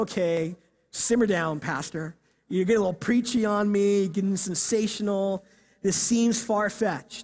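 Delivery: plain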